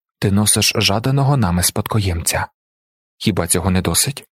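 ordinary delivery

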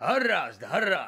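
abrupt, loud, panicky cut-off, a bit rattled. An uncle cuts off his nephew mid-explanation, loudly cutting him off. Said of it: "голосно урвав його".

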